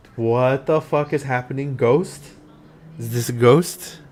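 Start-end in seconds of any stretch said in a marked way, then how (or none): none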